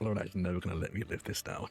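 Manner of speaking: muttered under the breath. Playing a character striking, saying a line under breath: muttered under breath. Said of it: "I think I say under my breath".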